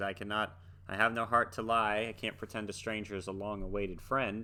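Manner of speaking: ordinary talk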